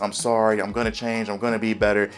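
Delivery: gentle, soft-spoken, apologetic voice. Describing a TV character who apologizes every episode, in Carmy's soft voice. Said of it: "He talks in his real soft voice".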